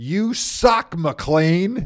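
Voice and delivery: very loud, booming, top-of-lungs heckling bellow. Retelling how a fan named Dale yelled at Paul McLean before puck drop, Dale's bellow. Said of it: "he would bellow at the top of his lungs".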